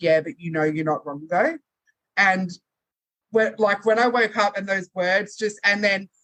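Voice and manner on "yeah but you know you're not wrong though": simple, low-key, understated delivery. Retelling what a guy said in a dream: imitating someone speaking quietly. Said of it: "he just said really quietly in the dream".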